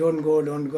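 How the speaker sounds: normal talking voice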